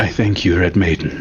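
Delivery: muttering under breath. Voicing a character who opens a door, muttering under his breath. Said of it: "mutters under his breath".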